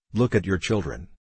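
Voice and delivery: ordinary talk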